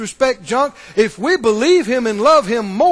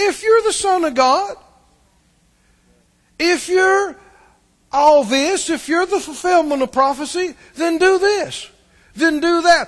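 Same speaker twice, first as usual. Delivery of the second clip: acted-out, higher-pitched, disrespectful, mocking, sarcastic taunting; 6 semitones higher than usual. Quoting the devil's words to Jesus, imitating a sarcastic taunt. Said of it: "This taunting, this sarcasm".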